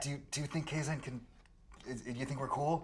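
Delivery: loud, hard-pushed whisper-yell. As a player character, calling out to a companion, whisper-yell. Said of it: "kind of whisper yell".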